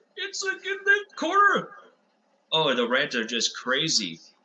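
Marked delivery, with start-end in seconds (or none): 0.2-1.7 very high, squeaky, angry rant. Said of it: "he just gets squeaky".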